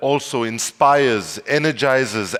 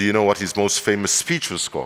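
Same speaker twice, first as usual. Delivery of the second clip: plain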